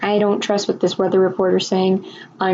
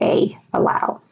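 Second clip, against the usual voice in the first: normal talking voice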